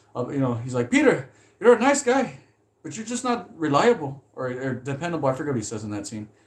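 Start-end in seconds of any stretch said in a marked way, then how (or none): 0.9-5.3 angry, scolding, chewing-out voice. Retelling the boss chewing Peter out for being late: impression of Peter's pizza boss. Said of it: "someone said my impression was pretty good".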